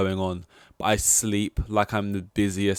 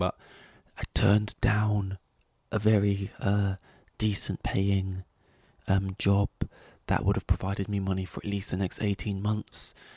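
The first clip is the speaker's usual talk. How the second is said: secretive, soft, hushed half-whisper; 5 dB quieter than usual. Speaker admitting something in case anyone's listening, half-whispering. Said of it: "I gotta whisper this right now".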